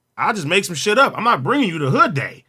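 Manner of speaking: plain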